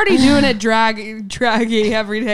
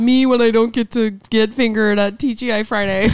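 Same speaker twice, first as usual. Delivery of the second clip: ordinary delivery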